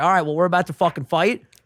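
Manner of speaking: ordinary talk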